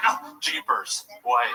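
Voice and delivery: caught off guard, jumpy, startled exclamation. Retelling how a man reacts when startled: imitating Mark startled. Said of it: "Every time he gets startled, he's like".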